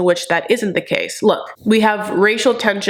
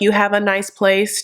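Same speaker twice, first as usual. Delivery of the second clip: put-on flat, cold tone. Retelling what Lisa said to Usman's mom: imitating a flat, cold tone. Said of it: "literally in that tone".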